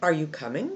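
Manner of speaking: rising, question-like pitch on the word coming. Demonstrating how a yes-no question sounds: rising pitch at the end on coming. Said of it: "you only have an up tone if the answer is yes or no ... it sounds like this".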